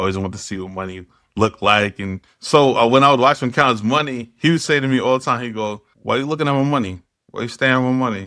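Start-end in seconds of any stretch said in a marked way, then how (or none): 6.0-8.3 mock, lighthearted, joking, teasing tone. Retelling what dad said while counting his cash: imitating a joking tone. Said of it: "He said it in a joking way".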